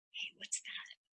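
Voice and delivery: soft whisper. Acting out curiosity speaking into someone's ear: whispering. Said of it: "And it's a whisper".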